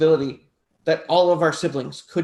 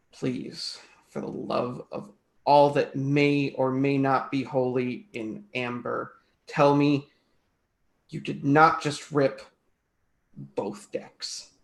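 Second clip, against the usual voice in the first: seething, angry muttering under breath, quieter; 3 semitones lower, 5 dB quieter than usual. Voicing a character speaking under breath at Rin: seething, under the breath. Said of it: "silently seething and just under my breath".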